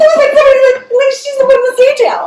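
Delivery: put-on excited, childlike scream.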